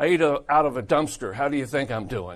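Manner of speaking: loud, sarcastic retort tone. Retelling how a man answered when asked how he was doing, retelling a sarcastic reply. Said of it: "that was funny, sarcastic".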